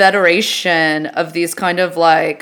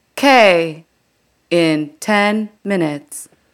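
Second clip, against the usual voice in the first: slow train announcement speaker voice. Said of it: "you got the pauses".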